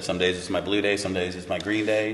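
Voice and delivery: ordinary talk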